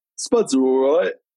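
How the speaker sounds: imitated man's way of speaking. Retelling what Paul said about the potatoes: imitating Paul. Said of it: "That's exactly how he sounds".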